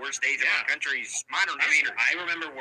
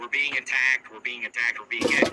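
ordinary talk, nothing marked

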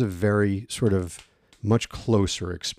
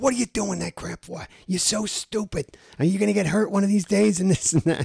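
high-pitched, put-on Bronx New York accent; 11 semitones higher than usual. Imitating his friend's boyfriend scolding him, in a put-on New York bookie accent. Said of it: "he's like a bookie from like new york".

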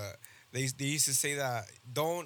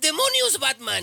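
shrill, very high, loud, raspy dubbed cartoon voice; 11 semitones higher, 12 dB louder than usual. Showing how cartoons dubbed into spanish always sound: imitating spanish cartoon dub voice. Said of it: "they always sound like this".

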